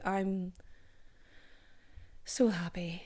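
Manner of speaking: mournful, sorrowful voice, soft and sad-sounding. Thanking listeners for listening and reviewing, but sounding very sad. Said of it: "That sounded very sad".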